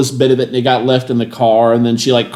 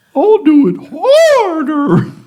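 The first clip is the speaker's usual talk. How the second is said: high, drawn-out whale voice. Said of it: "No, in a more whale voice".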